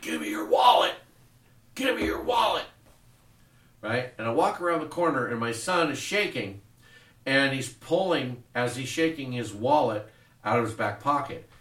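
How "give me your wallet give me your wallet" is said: mock yelling, very high-pitched and urgent. A father retelling walking outside after paying the bill, imitating someone yelling. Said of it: "I hear somebody yelling".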